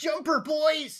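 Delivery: piercing, shrill, very high-pitched shout. Narrating a scene, the speaker voices someone's shrill, high-pitched shout. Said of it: "you hear in a sh- shrill, high pitched voice someone shout".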